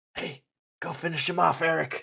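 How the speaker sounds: stage whisper. A player's character dashes away and whispers next to eric: whispering. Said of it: "whisper next to Eric and be like".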